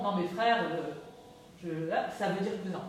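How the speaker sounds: ordinary talk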